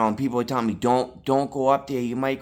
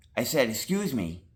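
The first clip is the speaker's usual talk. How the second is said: usual speaking voice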